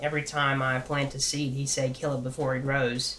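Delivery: ordinary delivery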